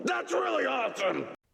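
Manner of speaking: over-the-top, high, shouting voice of mock awe.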